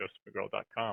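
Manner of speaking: said really quick, rattled off fast.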